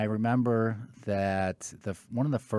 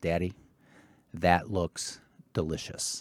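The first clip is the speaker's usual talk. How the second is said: imitated very serious, grave voice; 3 semitones lower than usual. Retelling a five-year-old daughter's comment on a commercial: imitating a very serious voice. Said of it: "in probably the most serious voice".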